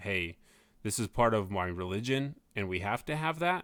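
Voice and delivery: plain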